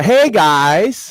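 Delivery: upward inflection rising at the end of guys. Showing how to say the video greeting, rising upward inflection on guys. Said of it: "with the upward inflection. Upward inflection, always".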